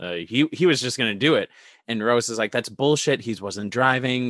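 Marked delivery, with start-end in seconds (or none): none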